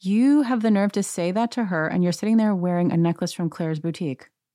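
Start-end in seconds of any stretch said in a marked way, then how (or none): none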